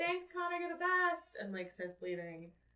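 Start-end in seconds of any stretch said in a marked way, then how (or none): 0.0-1.4 very loud, very high-pitched yell. Voicing a character calling thanks while leaving a bookshop: yelling. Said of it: "Talia yells".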